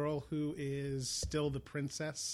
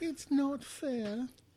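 very high, fake, put-on British accent; 11 semitones higher, 3 dB louder than usual. Told to deliver the line with a British accent; British accent. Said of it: "Just do it with the British accent".

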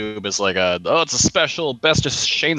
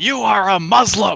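mock very high, shrill yelling; 10 semitones higher, 4 dB louder than usual. Retelling a mom yelling at the TV: imitating someone yelling. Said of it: "her yelling at the T V at Obama".

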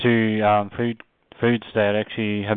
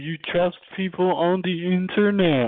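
put-on Canadian accent with pitch raised; 8 semitones higher than usual. Mimicking how Mike Miller reacts when told about an article, use a Canadian voice. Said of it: "Canadian voice".

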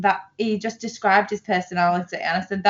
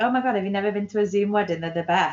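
obvious sarcasm with fake delight. Retelling a reply to a match's joke on a dating app: retelling own sarcastic reply. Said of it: "Obviously being sarcastic".

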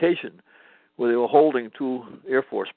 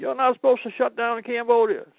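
mock officer yelling, voice very high-pitched; 13 semitones higher than usual. Retelling how the officer in charge came running out: imitating someone yelling. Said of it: "he starts yelling at me".

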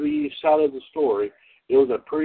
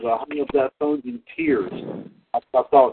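normal talking voice

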